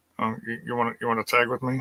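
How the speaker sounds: put-on sheepish tone. Acting out a woman asking another to be her tag partner, imitating someone very sheepish. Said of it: "she's just Miss Mumbles... So she very sheepishly".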